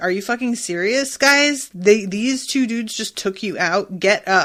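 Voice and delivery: ordinary talk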